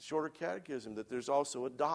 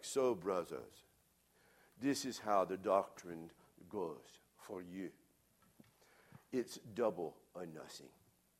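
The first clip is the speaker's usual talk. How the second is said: imitated heavy Swiss accent; 7 semitones lower, 4 dB quieter than usual. Quoting a Swiss theologian teaching on double imputation, in a heavy Swiss accent. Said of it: "he had a pretty heavy accent".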